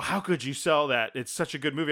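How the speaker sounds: plain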